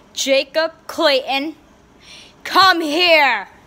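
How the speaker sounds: cross, angry tone. Playing someone calling jacob clayton to come here, angry. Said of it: "I am mad".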